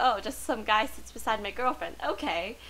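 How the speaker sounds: ordinary talk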